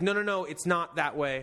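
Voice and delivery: ordinary talk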